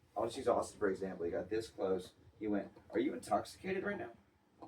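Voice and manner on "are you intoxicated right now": mock-grave, dead-serious tone, very high-pitched. Retelling checking in, the speaker quotes Colt's question: imitating Colt's serious question. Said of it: "In the most serious".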